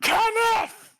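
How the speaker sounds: high, carrying cupped-hands shout, pitched way up. Calling up to someone on the roof, hands cupped: shouting a name. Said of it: "cut my hands around my mouth and go".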